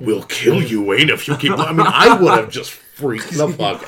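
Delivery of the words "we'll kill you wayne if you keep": sinister, evil, demonic possessed-toy voice. Voicing a toy that comes to life and threatens a child: evil demonic He-Man voice. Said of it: "in this evil, demonic voice".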